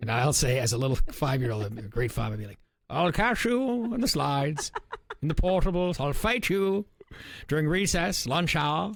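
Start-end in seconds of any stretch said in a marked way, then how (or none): 2.9-8.9 put-on British statesman voice. Retelling a childhood playground game, pretending to be Winston Churchill voice. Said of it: "pretend I was, like, Winston Churchill being British".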